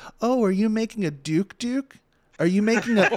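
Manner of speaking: put-on silly, high, cooing baby-talk voice. Retelling what a woman kept saying, mocking baby-talk voice. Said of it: "that stupid voice that you do with babies".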